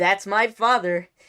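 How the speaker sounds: loud show-opener announcer voice. Reading a post aloud to a co-host; Disney Channel intro voice. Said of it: "I'm gonna read this like a Disney Channel intro".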